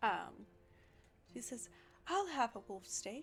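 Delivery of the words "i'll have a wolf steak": put-on, stilted, acted-sounding stage voice. Voicing a woman ordering a wolf steak: voice that sounds like acting. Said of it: "in a voice that doesn't sound very much like Patem".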